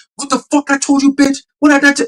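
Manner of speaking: mock furious rant, very high-pitched. Retelling seeing Jake on a hill cursing a woman out, imitating Jake cursing. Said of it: "talking mad shit".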